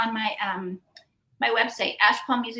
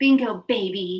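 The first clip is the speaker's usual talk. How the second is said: put-on seductive, flirty tone, lower; 3 semitones lower than usual. Repeating the flirty line when asked: imitating a seductive come-hither line. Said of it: "Say that again, [name]".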